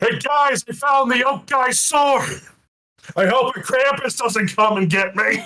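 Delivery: loud, shrill, top-of-the-lungs yell, pitched very high. Voicing a character bursting through a door: yelling as loud as possible. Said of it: "burst through this door as loud as possible and yell".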